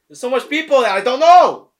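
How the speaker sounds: very loud, high-pitched, shrill shouting. Going through a list of names he doesn't know, yelling. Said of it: "Why are you yelling?".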